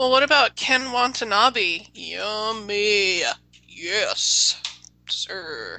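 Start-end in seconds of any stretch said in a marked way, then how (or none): 3.7-5.8 very deep, low, grave, serious voice. Showing off a put-on voice mid-conversation, in a serious voice. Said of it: "That's my serious voice".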